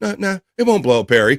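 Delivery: calm, soothing tone. Retelling one man's answer during a microwave egg argument, imitating a quiet, calm voice. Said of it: "real quietly, calmly going".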